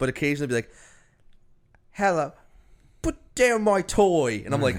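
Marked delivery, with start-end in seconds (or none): 1.9-4.4 put-on high, very slow English accent, slipping in and out. Mocking child actors whose American accents slip, imitating kid's slipping English accent. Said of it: "the kids are trying to do American accents".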